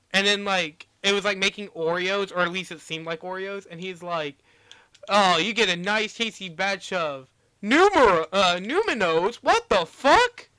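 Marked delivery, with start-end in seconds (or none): 5.0-10.3 loud, rising, drawn-out, truly rattled disbelief. Retelling a meme about factory footage, imitating someone genuinely shook. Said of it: "he sounded so genuinely shook".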